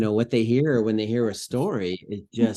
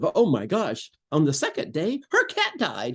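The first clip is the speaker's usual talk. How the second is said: bright, joyful, swooping, rising sing-song voice; 6 semitones higher than usual. Showing how not to read a somber story line: big joyful voice. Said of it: "the big, joyful voice of".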